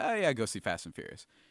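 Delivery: normal talking voice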